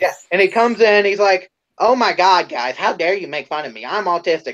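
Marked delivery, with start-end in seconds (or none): 1.8-4.5 mock-pissy, irritated tone. Retelling what a man said when he reappeared out of nowhere, mock-pissy complaint. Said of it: "he gets all pissy".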